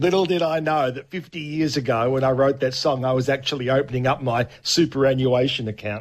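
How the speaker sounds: ordinary talk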